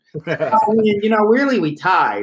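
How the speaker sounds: very high voice with words stretched slowly. Showing an impression of a league rival who tied: imitating Ariel Cohen. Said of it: "I've got the Ariel Cohen impression down".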